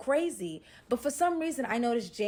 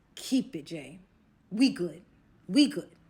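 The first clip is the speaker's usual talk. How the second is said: put-on small, babyish whine; 3 semitones lower, 3 dB louder than usual. Retelling what Kilo said when offered money, imitating Kilo as a big baby. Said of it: "Kilo sounding like a big baby".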